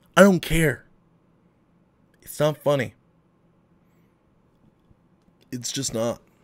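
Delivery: choked-up voice breaking and catching with emotion. Addressing viewers in an emotional video, getting choked up. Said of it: "I'm sorry that I'm getting choked up".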